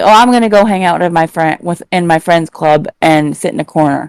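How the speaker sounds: ordinary talk, nothing marked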